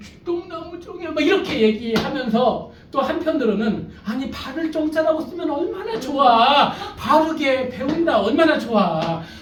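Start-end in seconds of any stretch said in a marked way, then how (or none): 0.0-1.1 put-on shrinking, faint, tearful, high little voice. Recalling being teased with a nickname at school, retelling a tearful, faint voice. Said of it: "울음 섞인 목소리로".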